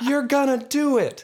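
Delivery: shrill, very high, loud yell. Recounting a fight scene, quoting what a wife yells from the crowd: retelling a yell from a crowd. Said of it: "That's what she yells from the crowd".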